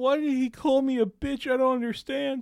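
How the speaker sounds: acted, very high, weepy sobbing voice. Retelling how another streamer reacted after being insulted: imitating someone crying. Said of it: "starts crying and goes".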